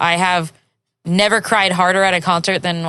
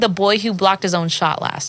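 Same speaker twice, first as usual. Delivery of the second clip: plain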